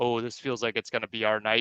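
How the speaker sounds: ordinary talk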